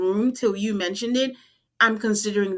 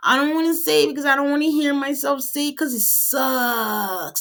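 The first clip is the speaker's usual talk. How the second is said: put-on whining voice, "sucks" stretched out; 4 semitones higher than usual. Retelling what a man on a show said to her, mock whining. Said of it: "And then he whines".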